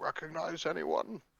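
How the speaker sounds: very quiet, hushed half-whisper. Playing a character in a pub in a tabletop game, lean over and half-whisper to Oliver. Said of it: "I'm gonna lean over and whisper".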